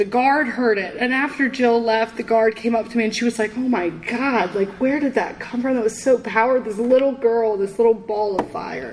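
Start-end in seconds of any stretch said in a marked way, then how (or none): none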